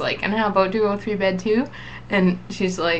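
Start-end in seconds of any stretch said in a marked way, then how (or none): 0.2-1.7 playfully put-on joking tone. Retelling walking over to ask about her own bed, retelling a joking question. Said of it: "I just walked over jokingly".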